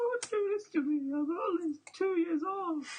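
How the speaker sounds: very high, tearful, crying voice. Imagining victims' reactions, acting out their pleas: mock crying plea. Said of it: "they're all crying like".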